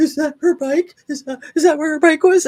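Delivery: mock high, weepy puppy-dog whimpering. Retelling how a man sounded on body cam footage: imitating someone crying like a puppy. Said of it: "crying like a puppy dog".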